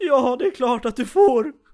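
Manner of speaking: mock very loud, high, weepy, tearful burst of words. Recounting answering someone who asked to borrow it, retelling saying yes while crying. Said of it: "Då började jag gråta och sa".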